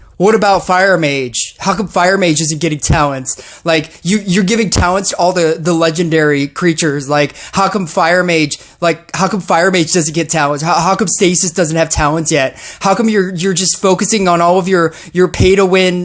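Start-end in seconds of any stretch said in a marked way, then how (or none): none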